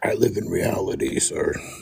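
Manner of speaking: whispery, roughened, congested-sounding voice, sounding terrible. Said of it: "I mean, you sound terrible".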